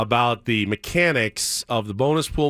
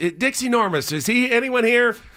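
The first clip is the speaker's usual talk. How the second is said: put-on yelling bartender voice, higher pitched; 12 semitones higher than usual. Retelling how a bartender yells out a prank name: imitating Moe yelling. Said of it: "then they'd yell out".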